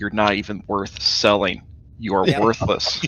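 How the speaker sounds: voiced stage half-whisper. Giving a mock pep talk in someone's ear: half-whispering. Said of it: "you just whisper in his ear".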